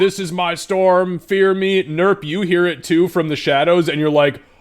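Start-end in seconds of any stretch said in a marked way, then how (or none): 0.0-1.8 grand, boastful, high, drawn-out shout. A storyteller voices a character suddenly calling out from the shadows: shouting out. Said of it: "all of a sudden like shouting out".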